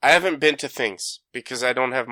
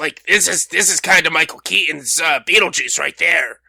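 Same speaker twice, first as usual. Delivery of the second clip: gravelly throat, high-pitched character voice; 5 semitones higher, 5 dB louder than usual. Showing the other speaker how Michael Keaton's Beetlejuice sounds, gravelly high Beetlejuice voice. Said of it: "it's gravelly and it's it's it's higher pitch".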